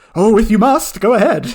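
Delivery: odd, high-pitched, loud weird voice, put-on. Granting another speaker's request to redo a line, in a weird character voice. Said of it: "I'll be continuing with my weird voice".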